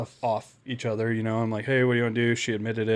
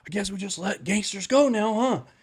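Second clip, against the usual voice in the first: put-on seething fury, angry and pitched up; 9 semitones higher than usual. Retelling what a fellow officer said while slamming doors: imitating someone angry. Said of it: "super angry about it".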